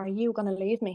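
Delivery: mock whispering. Retelling what someone whispered in her ear: imitating someone whispering. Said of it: "he whispered in my ear".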